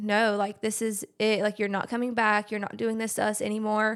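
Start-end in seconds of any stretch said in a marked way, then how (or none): none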